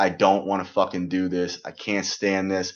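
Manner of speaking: mock-crying whine like a baby. Retelling calling parents in the first month there, imitating crying like a little baby. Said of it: "literally crying like a little baby".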